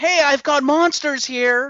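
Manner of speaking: blurted call-out, high and light. Speaker mocks a movie character in a crowded mall: mock-screaming Marnie impression. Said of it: "basically screams out".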